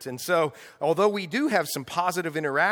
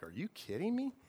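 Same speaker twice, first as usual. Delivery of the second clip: acted, soft, sarcastic, wisecracking smart-aleck tone; 13 dB quieter than usual. Retelling Jesus's reply to people demanding a miracle, mock smart-aleck retort. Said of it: "I'm saying it in my smart aleck way".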